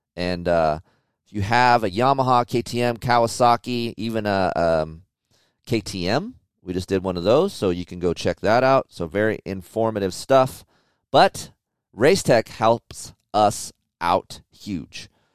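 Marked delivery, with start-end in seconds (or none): 11.1-15.1 slow, deliberate pace, each word given its time. Thanking a sponsor for its help, speaking slowly. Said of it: "I say that slow".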